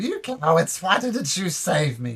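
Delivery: loud, high, angry shouted yell. Game master voicing the Domoran brothers and mother cursing at them, shouting curses. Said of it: "them shouting curses at them".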